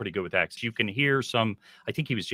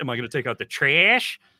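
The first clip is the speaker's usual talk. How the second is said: mock playful, loud, high-pitched teasing; 5 semitones higher, 5 dB louder than usual. Retelling teasing the girlfriend about her accent: imitating teasing. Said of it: "I love to tease her endlessly".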